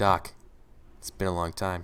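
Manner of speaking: quiet calm delivery. Playing a reunion scene, calming an angry partner: quiet, calm delivery. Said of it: "diffusing him, being, like, quiet".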